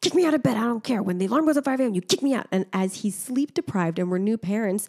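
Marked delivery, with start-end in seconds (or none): 0.0-2.5 heated, pitched-up drill-sergeant voice. Retelling the speaker's partner's demand as new parents, imitating a heated drill-sergeant tone. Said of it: "drill sergeant kind of I'm heated way".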